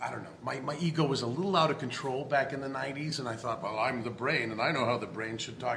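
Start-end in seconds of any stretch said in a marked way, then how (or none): none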